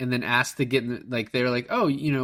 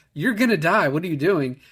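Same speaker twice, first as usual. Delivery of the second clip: put-on shrieking woman's scream; 4 semitones higher, 3 dB louder than usual. Retelling a movie scene of a mother in the water: imitating a woman screaming. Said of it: "just fucking screaming".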